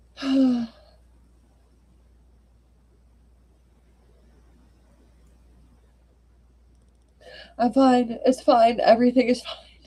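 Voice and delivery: speaking through tears. Host thanking listeners after a sad reading, crying while talking. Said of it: "I don't know why I'm crying so hard".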